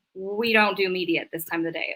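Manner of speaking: usual speaking voice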